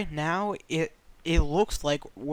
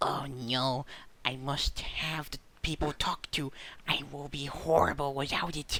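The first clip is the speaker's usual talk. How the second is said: quiet, soft, hushed gremlin voice; 5 dB quieter than usual. Imagining him in a corner wanting people to talk to, in a Bill Belichick gremlin voice. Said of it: "in his gremlin voice is like".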